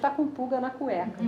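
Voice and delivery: ordinary talk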